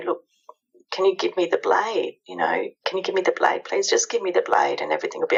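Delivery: very calm, soothing, quick coaxing tone. A parent demonstrating how to speak to their daughter, very calm. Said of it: "so calm".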